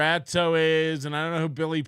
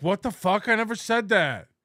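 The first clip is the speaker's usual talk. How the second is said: mocking, teasing put-on parody voice; 4 semitones higher than usual. Imitating someone who pulls over to type in chat: imitating Riles.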